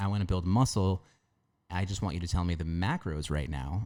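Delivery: ordinary delivery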